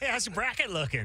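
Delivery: put-on American accent. Mocking how people come up to you at the tournament, mock American accent. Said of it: "That's him trying to talk like an American".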